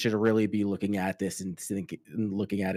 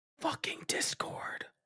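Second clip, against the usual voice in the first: very quiet, hushed whisper, barely audible. Answering where people should send their questions: whispering. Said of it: "I didn't know you were whispering".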